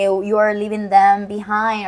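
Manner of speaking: ordinary talk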